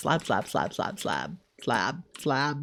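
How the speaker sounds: low, soft, rapid-fire repetition.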